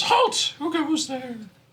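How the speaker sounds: put-on small, very high, echoing child's voice. The game master voices a small orb that rises up to greet the party, in a childlike voice. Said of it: "one greets you in like a childlike voice".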